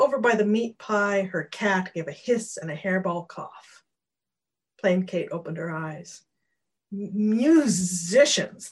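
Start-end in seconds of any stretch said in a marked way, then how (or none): 6.9-8.7 loud, drawn-out, spat-out word. A cat speaks up to its owner: spat. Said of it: "the cat spat".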